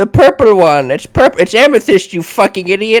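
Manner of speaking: put-on high, domineering, bossy old man voice. In a scene, an old man who orders the speaker around snaps back, bossy old man voice. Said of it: "the old guy who like orders me around".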